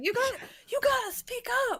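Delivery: shrill, very high shouting. After playing loud, the speaker acts out shouting at someone to speak up. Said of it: "just shouting at them like".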